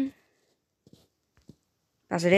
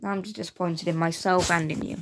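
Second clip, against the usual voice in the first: usual speaking voice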